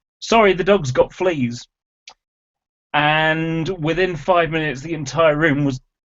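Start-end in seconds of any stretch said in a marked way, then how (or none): 0.2-1.7 plain, announcement-like delivery, stated out loud. Retelling what they answered their friend in class, in a loud voice. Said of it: "said in a loud voice".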